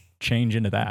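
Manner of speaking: ordinary talk, nothing marked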